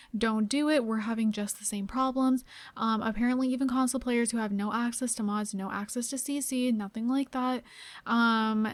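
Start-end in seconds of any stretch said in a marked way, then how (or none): none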